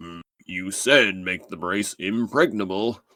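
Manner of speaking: smug, self-satisfied voice, savouring the words. Retelling a scene after being asked for the impression: smug Rhinox impression.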